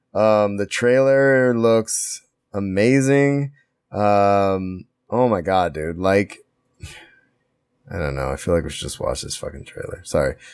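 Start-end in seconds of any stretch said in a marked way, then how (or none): 5.0-10.0 low mumbling mutter under the breath. Talking about a movie trailer, then muttering to himself. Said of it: "I'm muttering to myself".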